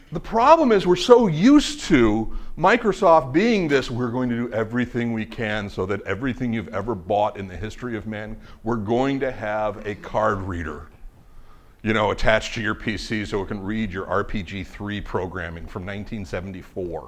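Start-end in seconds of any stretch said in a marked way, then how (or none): none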